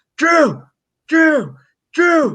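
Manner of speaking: put-on, very high, shrill, all-out scream. Recounting screaming someone's name until he finally looked, at the top of the lungs. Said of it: "screaming his name at the top of my lungs".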